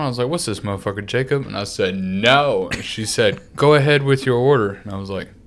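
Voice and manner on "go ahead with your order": robotic, automated recorded announcement voice. Retelling ordering food through a car window, doing the automatic robot voice. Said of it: "this automatic robot voice just comes on".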